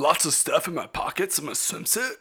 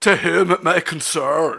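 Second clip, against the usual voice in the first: over-the-top, bad put-on Irish accent; 2 semitones lower, 3 dB louder than usual. Reading a strange written note aloud in an exaggerated bad Irish accent. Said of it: "It looks like it's written in a bad Irish accent".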